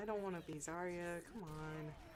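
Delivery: plain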